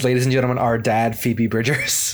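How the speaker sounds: ordinary talk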